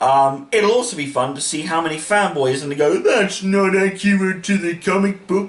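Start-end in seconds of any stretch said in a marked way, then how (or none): 3.0-5.5 goofy put-on fanboy voice, pitched higher. Predicting fanboys' complaints about Moon Knight, the speaker uses a silly fanboy voice. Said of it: "I put on a silly voice".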